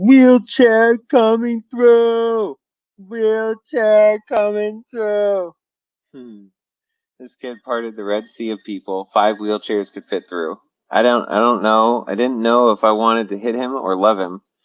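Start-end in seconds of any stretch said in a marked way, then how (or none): 0.0-5.5 acted, very high, loud, drawn-out announcer yell. Retelling how Andy got them through a crowd, imitating Andy's loud yell. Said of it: "with a loud and distinct voice".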